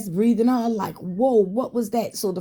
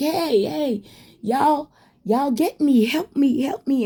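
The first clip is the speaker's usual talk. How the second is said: drawn-out, screaming call; 4 semitones higher than usual. Retelling calling to people outside for help: imitating own past screaming. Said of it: "And I'm screaming to them".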